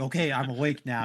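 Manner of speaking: ordinary talk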